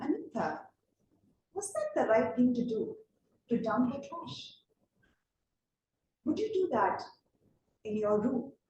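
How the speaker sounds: gentle, soft, sweet voice. Retelling what her mother said to the speaker, in a soft, sweet voice. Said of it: "in her soft, sweet voice".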